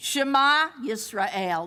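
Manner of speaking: ringing, emphatic, called-out proclaiming voice. Retelling how they answered Jacob's worry: retelling a very loud reply. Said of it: "responded in a very loud voice".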